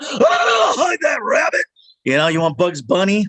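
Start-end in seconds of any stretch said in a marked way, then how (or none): 0.0-1.7 very slow, shouting cartoon cowboy voice, hollered. Telling how he offered to voice a whole film, he does Yosemite Sam voice. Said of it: "You need Yosemite Sam?".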